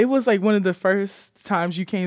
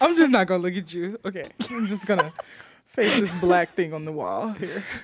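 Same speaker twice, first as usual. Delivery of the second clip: laughter bubbling under the words, talking through giggles; 3 semitones lower than usual. An episode host turns away from the other host; can't stop laughing. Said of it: "Because I can't stop laughing".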